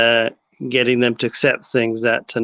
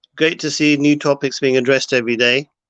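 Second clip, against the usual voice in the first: ordinary talk, nothing marked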